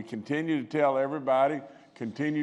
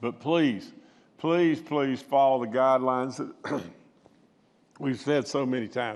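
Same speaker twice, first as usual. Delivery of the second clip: choked up, emotion catching in the throat. Urging listeners to follow the guidelines, choked voice. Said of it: "I got choked right there".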